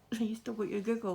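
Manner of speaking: ordinary talk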